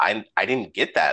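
plain

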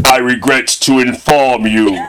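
put-on horror villain voice. Announcing this week's losing movie, doing a Pinhead voice. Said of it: "I'm gonna do my pinhead".

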